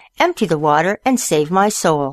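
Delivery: ordinary delivery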